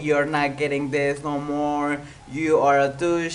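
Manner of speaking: ordinary talk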